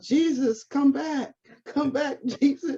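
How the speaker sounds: play-acted child voice, high, drawn-out scream. Retelling a child playing Moses calling after Jesus: imitating a child screaming. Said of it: "Moses is screaming out".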